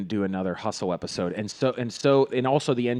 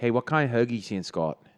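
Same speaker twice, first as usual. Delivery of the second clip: put-on Pittsburgh accent. Podcast host showing the accent they slip into when excited, put-on accent. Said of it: "you hear us doing this accent".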